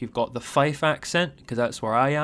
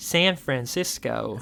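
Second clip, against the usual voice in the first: put-on American accent. Discussing the SF Pro font name, saying San Francisco in an American accent. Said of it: "I hope you enjoy my American accent there".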